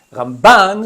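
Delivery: Ramban said with stress on second syllable -ban. Telling Ramban from Rambam by stress, the speaker says: stress on -ban of Ramban. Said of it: "sur la deuxième syllabe".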